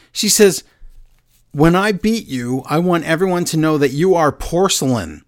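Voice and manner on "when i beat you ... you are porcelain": usual speaking voice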